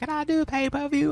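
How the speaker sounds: put-on girlish schoolgirl voice, way up high. Retelling what Leon asked them: Leon voice. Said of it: "that was my Leon voice".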